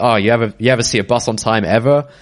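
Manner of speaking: usual speaking voice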